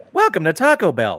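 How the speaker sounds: thin, pitchy, shrill, chipper AI voice. Describing the drive-thru voice that annoys you, doing the Taco Bell drive-thru AI voice. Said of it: "supposed to be really chipper, but it's really thin and pitchy".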